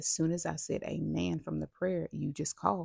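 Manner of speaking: ordinary talk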